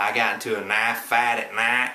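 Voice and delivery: Oklahoma drawl flattening the I in night and fight.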